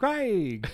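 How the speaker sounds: very high, thrilled little excited cry. Retelling how he says the brand name when a product is amazing: imitating an enthusiastic exclamation. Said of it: "the product is amazing, he's like".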